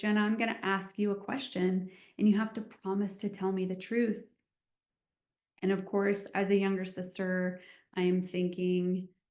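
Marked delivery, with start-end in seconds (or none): 0.0-4.2 play-acted grave, no-nonsense, very serious and earnest tone. Retelling an older sister's question at lunch: imitating a serious tone. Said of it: "she gets very serious".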